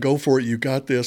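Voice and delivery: mock yelling, encouraging tone. Speaker recalls yelling encouragement at a teammate near the finish line, retelling a yell. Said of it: "I just remember yelling at him".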